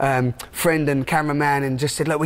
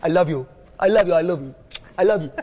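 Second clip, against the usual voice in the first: put-on Jamaican accent with Indian-leaning sound; 2 semitones higher than usual. Retelling what a man at a rush-hour roundabout says, in a Jamaican accent. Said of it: "That's my best Jamaican accent".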